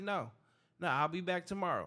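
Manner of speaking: ordinary talk, nothing marked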